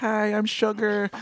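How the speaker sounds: put-on high voice. Describing the first episode that introduced a character, doing her hello: Sugar's high-pitched voice. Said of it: "she has a really high-pitched voice".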